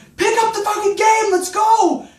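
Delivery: mock very high, angry yelling in Greek. Retelling yelling at a cousin with a hurt knee: imitating own yelling. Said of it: "I'm yelling at him in Greek".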